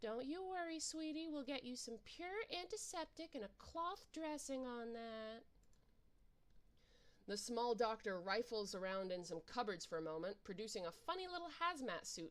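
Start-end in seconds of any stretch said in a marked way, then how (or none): 0.0-5.4 soft, gentle, kindly grandmotherly voice. Reading a game's doctor character who greets an injured visitor: gentle grandmotherly voice. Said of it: "speaking in a gentle, grandmotherly voice".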